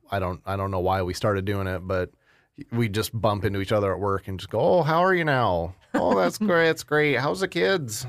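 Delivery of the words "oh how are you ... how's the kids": put-on Minnesota accent, very high-pitched. Acting out a running bit with a guy you bump into at work, in a put-on Minnesotan accent. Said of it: "do that there Minnesotan accent".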